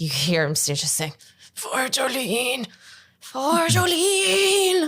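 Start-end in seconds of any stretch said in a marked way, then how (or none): 1.5-4.9 very high, drawn-out words strained with pain. Shot square in the stomach, he fights to keep from doubling over, strained with pain. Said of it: "using all of his will to kind of keep from doubling over".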